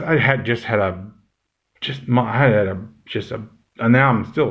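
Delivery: tangled, restarting, stumbling fumble over words. Wrapping up a video and losing the thread: stumbling over words. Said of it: "my brain's not working".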